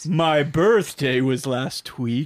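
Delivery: put-on vampire voice. Keeping the chat spooky for Halloween, saying this in a Dracula voice. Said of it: "I'd like this in a Dracula voice".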